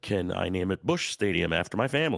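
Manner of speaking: usual speaking voice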